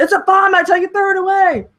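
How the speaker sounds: put-on shout. Retelling a manga scene about a bomb in a car: imitating someone yelling. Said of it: "Kondo yells".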